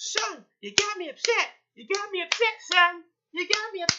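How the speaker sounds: very high street-corner tough-guy delivery. Speaker retells a woman on a train scolding a man, imitating a street-corner guy. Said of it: "It sounded just like a".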